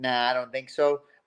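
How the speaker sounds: usual speaking voice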